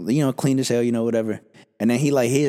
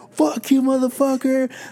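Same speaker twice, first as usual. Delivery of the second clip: mock, playful, very high-pitched yelled taunt; 13 semitones higher than usual. Retelling how you yelled at a guy just to be funny; retelling a yell. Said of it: "like just yelling at him and shit".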